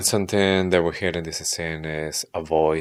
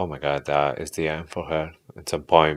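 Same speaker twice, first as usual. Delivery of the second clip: plain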